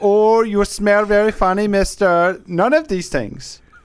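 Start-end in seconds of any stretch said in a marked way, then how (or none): 0.0-2.4 mock accent, slightly Indian-sounding. Podcast host giving an example of a comment they don't want, a little Indian-sounding accent. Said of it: "That sounded more kind of a little Indian in there".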